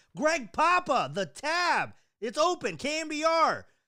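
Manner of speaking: very high, very slow, drawn-out shouted scream. Retelling ordering at a bar, repeating the tab name: retelling screaming. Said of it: "I started screaming".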